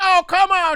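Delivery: exaggerated, cartoonish old-lady voice pitched very high. Retelling what an old woman said to an angry man: imitating a cartoonish old woman. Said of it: "the most cartoonish thing I've ever heard".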